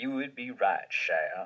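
not-quite-convincing put-on Louisiana southern gentleman accent. Answering Shia with a put-on southern gentleman Louisiana accent. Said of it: "i don't think that's your best southern gentleman louisiana impression".

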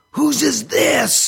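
mock shout, very high, shrill and rough. Retelling the professor holding up a piece before the class: retelling the professor's yell. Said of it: "he yelled out".

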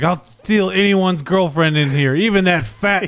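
slow, huge, booming delivery. Retelling how the wrestler talks to the crowd: Ric Flair impression. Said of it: "He's like".

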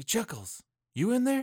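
hushed whisper. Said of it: "I'll just whisper in through the".

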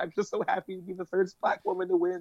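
weepy, tearful, crying, overcome with emotion. Retelling an Oscar speech, mock crying as Halle Berry. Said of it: "She was, like, crying".

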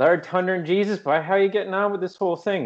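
Newfoundland accent, pitched very high. Acting out two Newfoundlanders chatting at a coffee shop, in a Newfoundland accent. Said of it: "I don't think I've really demonstrated that one for you".

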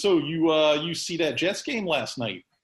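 put-on New Jersey guy accent. Retelling a game show sketch, doing the Jersey guy: Jersey guy voice. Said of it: "I always like doing the Jersey guy".

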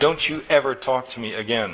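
plain reading voice

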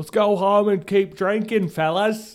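put-on high, loud Australian accent. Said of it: "I don't know why they're Australian".

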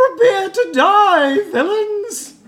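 very high, very loud, unthreatening battle cry. Game master voicing an unseen figure calling from a side door: unthreatening battle cry. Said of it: "That didn't sound very threatening. Vocally".

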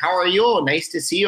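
put-on North Dakota accent. Retelling a rehearsal as an introverted North Dakota guy: put-on North Dakota accent. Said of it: "I was doing kind of like an accent".

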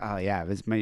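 ordinary delivery

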